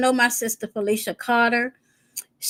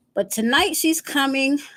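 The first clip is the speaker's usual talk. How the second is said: ordinary talk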